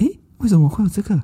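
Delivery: put-on quiet thief-like voice. Retelling a companion's reaction to decorations in the room: imitating 佩珍's quiet thief-like voice. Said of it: "他就这样很小声".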